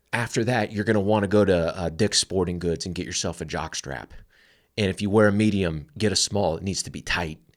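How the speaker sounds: ordinary talk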